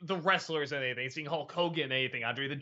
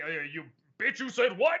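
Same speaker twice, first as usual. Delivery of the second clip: angry, vengeful, wrathful deity voice; 4 semitones higher than usual. Imitating the vengeful, smiting God of Ten Commandments: vengeful God voice. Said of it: "that kind of voice".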